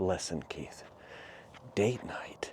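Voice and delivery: hushed, secretive, conspiratorial, confiding delivery. Retelling a friend's advice about date night: imitating a secretive tone. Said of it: "spoke like it's a secret".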